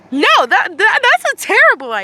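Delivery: high-pitched scolding. Reading a story aloud, a character scolding someone: high-pitched reprimand. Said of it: "you reprimanded him in a high-pitched tone of voice".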